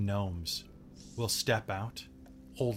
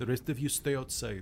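really bad, shoddy, put-on Russian accent. Recreating how some people sounded: really shitty Russian accent. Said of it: "That's how they sounded. ... They had Russian accents. I gave them really shitty Russian".

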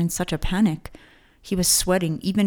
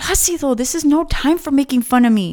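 growing upset, close to pleading, raised and pitched up; 8 semitones higher, 6 dB louder than usual. Narrating a character speaking to his grinning brother, growing upset. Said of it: "becoming more upset".

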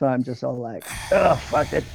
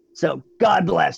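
sarcastic, mock-praising tone. In character, thanking a party member for offering help: sarcastic. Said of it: "it's obviously sarcasm".

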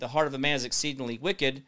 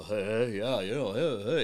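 low, chatty, easygoing patter with dropped voice; 4 semitones lower than usual. Imitating Uncle Barry chatting casually: Bill Cosby voice. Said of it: "Sounds like, uh, Bill Cosby".

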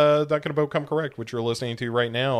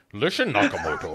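put-on Scottish accent. Imitating an actor's line from the movie being discussed: Sean Connery impression. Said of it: "Sean Connery walking around going like that".

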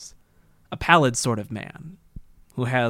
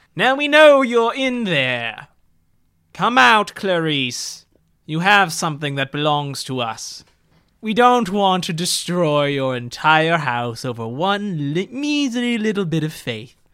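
haughty snobbish voice, higher and louder; 6 semitones higher, 4 dB louder than usual. Voicing a villain calling from outside a house: snooty, snobbish voice. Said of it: "a snooty, snobbish, and familiar voice".

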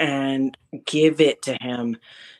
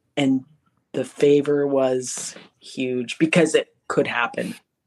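ordinary talk

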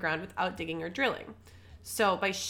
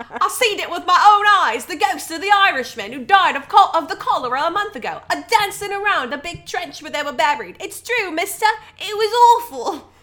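put-on very high, shrill, very loud Cockney child voice; 10 semitones higher, 13 dB louder than usual. Speaker rereads a quoted child's account, in a Cockney child accent. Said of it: "It's a Cockney accent child".

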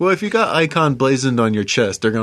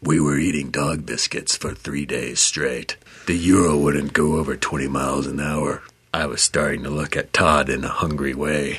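put-on gravelly, scary adventure voice, lower pitch; 9 semitones lower, 4 dB quieter than usual. Narrating the challenge in a gravelly, scary adventure voice. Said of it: "This is my adventure voice".

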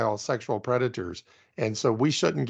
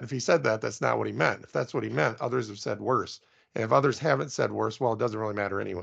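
usual speaking voice

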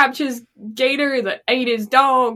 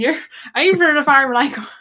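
West Country farmer voice, drifting toward Irish accent; 2 semitones higher than usual. Joking that people turn into farmers once they buy a farm, imitating a West Country farmer accent. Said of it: "sounded way more Irish than did West Country".

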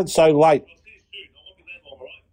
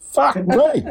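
high-pitched, surprised exclamation. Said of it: "You can use it in surprise".

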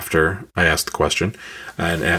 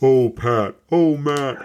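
very slow, every word drawn out; 8 semitones higher than usual. Retelling a joke at a bar: deepest Andre the Giant voice. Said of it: "the deepest, like, Andre the Giant voice I could do".

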